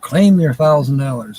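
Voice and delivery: ordinary talk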